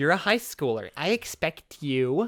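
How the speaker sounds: slow, exaggerated, mocking put-on voice. A ninth grader quotes what a woman said, mocking put-on imitation of her. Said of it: "I'm doing this voice to mock her".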